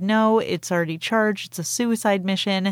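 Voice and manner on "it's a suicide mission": ordinary talk, nothing marked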